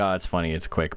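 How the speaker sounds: ordinary talk, nothing marked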